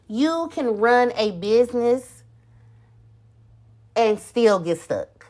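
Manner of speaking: stops cold, then long silent pause. Showing what an unplanned business sounds like: deliberate dead-air pause. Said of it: "I put that pause in there on purpose".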